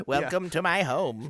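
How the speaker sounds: put-on creepy old witch-woman voice. Talking about the film Willard, speaker does Crispin Glover as a creepy old witch woman. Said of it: "like a creepy old witch woman".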